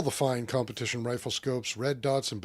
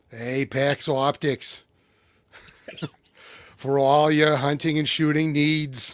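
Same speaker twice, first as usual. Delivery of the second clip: fake Boston accent, louder; 6 dB louder than usual. Rereading an ad line after choosing a voice: put-on Boston accent. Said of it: "I'd prefer Boston".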